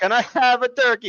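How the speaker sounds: put-on thick high Italian accent. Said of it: "the most stereotypical Italian person".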